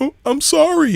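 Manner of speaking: high-pitched, sweet, innocent, tearful crying voice. Retelling a recording of a woman apologizing: imitating a sweet, innocent crying apology. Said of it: "she crying and she sounding all like, you know, uh, sweet and innocent".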